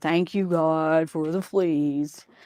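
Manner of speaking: put-on grudging voice, spoken through gritted teeth. Retelling a reluctant prayer of thanks: imitating praying through gritted teeth. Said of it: "she prayed through gritted teeth".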